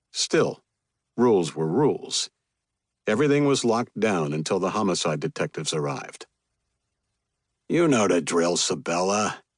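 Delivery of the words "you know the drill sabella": worn-out, exasperated, fed-up voice. Reading a story aloud, a cop answers the reporter: exasperated voice. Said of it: "said in an exasperated voice".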